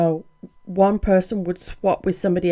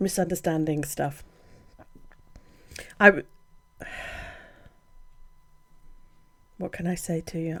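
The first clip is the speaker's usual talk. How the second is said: fighting tears, quieter; 2 semitones lower, 8 dB quieter than usual. Talking about feeling misunderstood, holding back tears. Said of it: "I'm trying not to cry".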